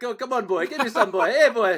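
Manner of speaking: accent from Belize. Coaxing another speaker to show off their old accent, in a mock Belizean accent. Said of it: "I got a whole Belizean thing going on".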